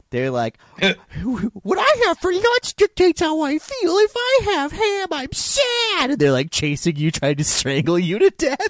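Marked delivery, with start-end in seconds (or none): 0.8-6.1 very high, slow, creepy character voice. Describing characters in a horror game, imitating their creepy way of talking. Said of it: "but they say it so creepily".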